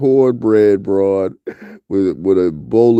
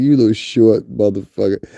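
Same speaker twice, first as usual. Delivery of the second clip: ordinary delivery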